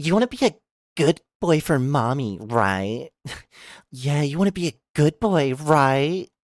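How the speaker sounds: put-on haughty, snobby, bitchy mean-girl voice. Speaker demonstrates a voice they can do, a bitchy girl voice. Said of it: "I can do a bitchy girl".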